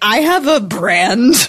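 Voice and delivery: very slow, drawn-out words broken up by laughter. Joking to another speaker about having a brand: laughing while talking. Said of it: "I can't say that sentence without laughing".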